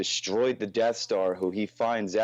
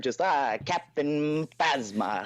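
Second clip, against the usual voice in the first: evil film-villain voice, slower; 7 semitones higher than usual. Showing how a character first sounded in his head, evil old-film villain voice.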